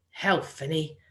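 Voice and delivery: ordinary delivery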